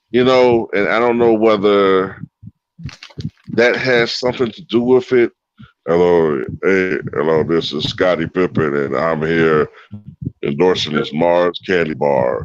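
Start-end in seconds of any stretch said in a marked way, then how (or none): 5.9-12.5 very low, robotic voice. Imitating Scottie Pippen endorsing a Mars candy bar, robotic deep voice. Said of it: "he kind of has this robotic, deep voice".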